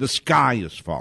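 ordinary talk, nothing marked

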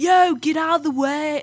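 high-pitched, Brooklyn-style New York accent. Speaker demonstrating how people in Brooklyn talk, Brooklyn accent. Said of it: "in Brooklyn, they have, like".

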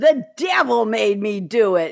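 loud, slow belting that misses the pitch. Quoting a famous TV catchphrase: bad Geraldine impression. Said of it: "I didn't do that real well".

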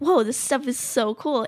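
ordinary talk

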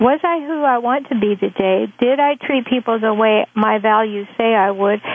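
ordinary delivery

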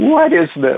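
acted-out laughter. Retelling running through the airport to baggage claim, retelling laughing. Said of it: "I'm just laughing all the way there going".

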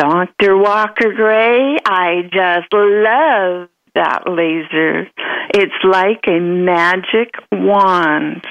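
Texan drawl with stretched vowels. A doctor recalls what a former patient would say to him, Marianne's Texan drawl. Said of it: "She had a wonderful Texan drawl".

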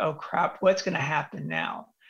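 ordinary talk

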